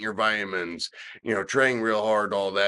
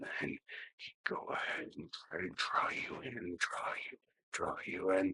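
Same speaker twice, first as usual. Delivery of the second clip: whispered, very quiet, breathy low murmur; 2 semitones lower, 14 dB quieter than usual. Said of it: "he'd speak really low like this".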